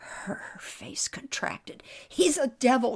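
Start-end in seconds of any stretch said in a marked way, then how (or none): 2.1-3.0 loud, sudden crying out of words. A girl asked to read her brother's mind answers, crying out. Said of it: "she cried".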